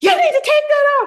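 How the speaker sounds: very high, shrill, loud, screeching scream. Retelling a customer in the store who put on a show: imitating someone screaming.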